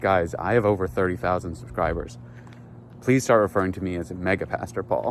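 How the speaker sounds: ordinary delivery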